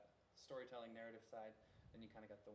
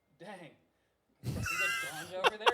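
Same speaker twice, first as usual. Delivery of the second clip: mock teasing, very high, very loud, swooping and joking; 25 dB louder than usual. Retelling what he jokingly said to a cop, retelling a joking quip. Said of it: "I jokingly looked over at the cop".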